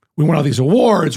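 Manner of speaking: normal talking voice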